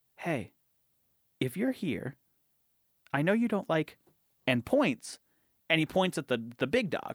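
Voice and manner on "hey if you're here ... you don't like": as quiet as possible, hushed, barely audible. Retelling how someone at a seance addressed a ghost: imitating someone speaking very quietly. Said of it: "as quietly as possible goes".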